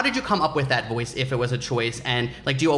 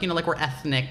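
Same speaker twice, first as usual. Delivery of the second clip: ordinary talk, nothing marked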